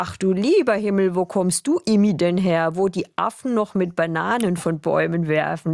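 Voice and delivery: ordinary delivery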